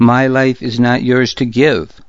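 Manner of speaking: ordinary delivery, nothing marked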